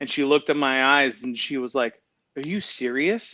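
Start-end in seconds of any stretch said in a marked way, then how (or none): 2.4-3.3 play-acted stunned, incredulous, disbelieving tone. Retelling how she reacted when he said he was willing; imitating disbelief. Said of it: "looked at me as in like disbelief".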